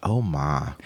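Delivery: mock Alabama southern accent. Imitating a southern woman from Civil War times: imitating Alabama southern belle accent. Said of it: "on a homestead in the middle of the Civil War".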